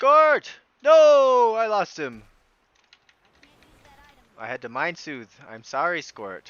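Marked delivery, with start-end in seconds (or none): 0.0-2.2 very high, very loud, shrill frustrated shout. Reacting to losing a group member in a game: yelling in frustration. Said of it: "I didn't mean to, to yell".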